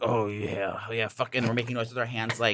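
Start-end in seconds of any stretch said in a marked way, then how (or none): 0.0-1.3 put-on manly grunts and moans, fake grunting. Retelling pretending to have sex to fool passersby: imitating fake sex grunting. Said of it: "I was making grunting noises".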